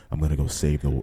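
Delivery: put-on scream-whisper. Trying a Batman voice as asked: Batman voice, scream whisper. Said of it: "Scream whisper".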